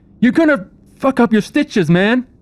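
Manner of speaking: very high-pitched, loud shouting. The narrator voices a character shouting at a man running after surgery: shouting a warning. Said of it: "Craig shouts out".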